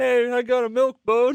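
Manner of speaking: very high-pitched, slow put-on voice. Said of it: "you broke into that voice".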